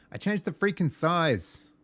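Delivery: shrill, very loud, high-pitched yelling outburst. Speaker realizes they changed the size while adjusting settings, yelling. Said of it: "Sorry for yelling at the mic".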